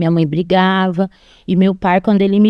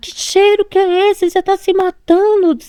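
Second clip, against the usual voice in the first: mock very high, shrill, shouted scolding voice; 12 semitones higher than usual. Retelling how the mother arrived and reacted to the smell: imitating mother shouting. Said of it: "minha mãe chegou já gritando".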